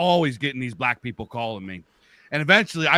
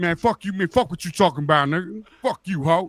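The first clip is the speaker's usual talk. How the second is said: high, pitched-up taunting trash talk; 5 semitones higher than usual. Retelling answering a caller with insults, imitating his own trash talk. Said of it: "I start talking shit".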